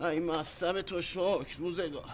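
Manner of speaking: plain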